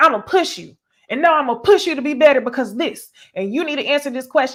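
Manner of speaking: put-on condescending coach voice. Describing how a man talks to women, imitating a condescending tone. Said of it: "it's a condescending tone".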